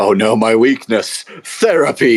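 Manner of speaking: sarcastic, mocking delivery with a slow drawl. Voicing a guarded figure answering questions about rage: mocking. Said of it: "He just looks at you mockingly".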